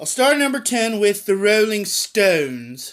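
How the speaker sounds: fake, put-on British accent. Announcing number ten on a top ten list: put-on british accent. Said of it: "I like saying that in a British accent".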